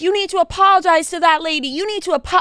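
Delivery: mock, high, scolding yell. Retelling a woman telling a laughing kid to apologize, acting out a scolding yell. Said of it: "They're yelling at the kid".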